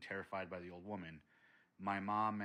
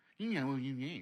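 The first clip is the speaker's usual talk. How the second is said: high, loud, taunting, mocking voice; 6 semitones higher, 7 dB louder than usual. Retelling the voice heard mocking them from the garage: imitating a mocking voice. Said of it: "it would literally sound like".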